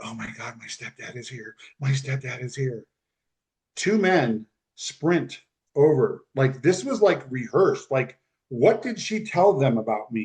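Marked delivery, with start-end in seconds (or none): 0.0-2.8 hushed whisper under the breath. Telling a story, the speaker repeats what a woman whispered on the phone, retelling a whisper. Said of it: "she whispers".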